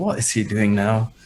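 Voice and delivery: soft, grumbling mutter under the breath. Player's character jogs over toward him, grumbling under his breath. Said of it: "just grumbling under my breath".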